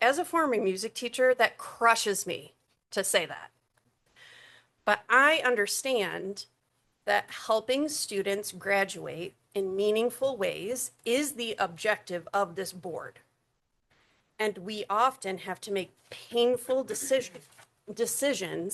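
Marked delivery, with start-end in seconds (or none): 4.9-18.7 choked up, emotion catching in the throat. A former music teacher addresses the board, choked up. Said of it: "I'm getting choked up".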